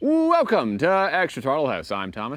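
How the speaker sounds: twenties radio announcer voice, high and swooping. Welcoming viewers and giving a name: 1920s radio announcer voice. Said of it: "like a nineteen twenties radio announcer".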